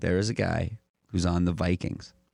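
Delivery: put-on chilling, ominous tone. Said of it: "she just said it in a way that was, like, gave you a shudder".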